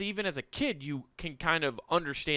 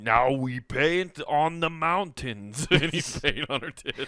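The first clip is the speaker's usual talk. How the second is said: put-on mixed-up voice, very slow, every word drawn out; 4 dB louder than usual. Joking about Jabba the Hutt painting, do a voice like Bob Ross mixed with Schwarzenegger. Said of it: "I love how you made it Bob Ross mixed with Schwarzenegger".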